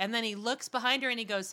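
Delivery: ordinary delivery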